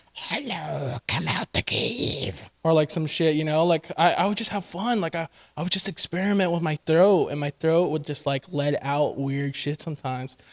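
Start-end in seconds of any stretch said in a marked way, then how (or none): 0.1-2.5 very slow, breathy, creepy whispered character voice. Talking about their vocal range, the speaker shows off a creepy character voice. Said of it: "a creepy character that would be like".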